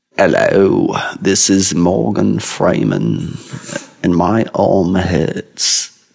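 very slow, measured, drawn-out British accent. Practicing accents, mixing two voices: British Morgan Freeman voice. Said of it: "It's a British Morgan Freeman".

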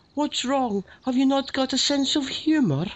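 put-on very high, old Scottish lady voice with Scottish accent. Comparing someone's voice to a relative's, imitating great aunt Joanne. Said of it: "imagine that was my great aunt Joanne saying".

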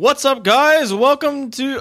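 booming, very loud, very high-pitched. Opening the podcast episode and welcoming the listeners: speaking really loud. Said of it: "I'm being really loud".

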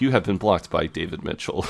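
normal talking voice

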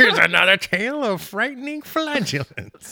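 very high, creepy host voice. Joking about a movie scene, introducing a tale: Crypt Keeper voice. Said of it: "It's the Crypt Keeper now".

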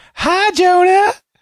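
put-on high, loud Southern belle accent.

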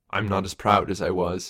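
ordinary talk

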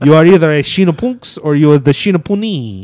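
loud, put-on Italian-style continental accent. Joking about the podcast name's Italian plural: talking like Super Mario. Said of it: "I like when you talk like, like Super Mario".

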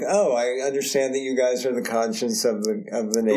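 ordinary delivery

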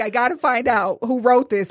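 ordinary talk

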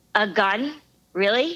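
ordinary delivery

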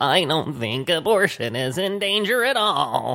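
deliberately terrible, clumsy, slow, high put-on voice. Quoting what she kept on saying: horrible Susan Collins impression. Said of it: "I'm doing a horrible impression of her".

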